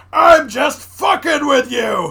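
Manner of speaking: very loud, slow, high-pitched, drawn-out scream. Recounting a movie scene, the zombie screams into the camera, retelling Clancy Brown's scream. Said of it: "and screams".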